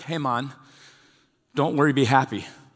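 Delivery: put-on Jamaican accent. Speaker voices God's reply reported by Isaiah to Ahaz, God in a Jamaican accent. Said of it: "I hear it in a Jamaican accent".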